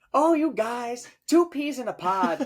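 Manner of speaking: put-on Irish accent, very high, very slow. Retelling what Kath said on a visit: imitating Kath in an Irish accent. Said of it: "In in an Irish accent?".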